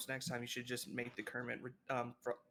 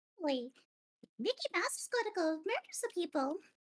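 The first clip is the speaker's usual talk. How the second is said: put-on cartoon voice, much higher pitch; 4 dB louder than usual. Joking around after being startled by Roger, sounding like Paimon. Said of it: "You sound like Paimon when you do that".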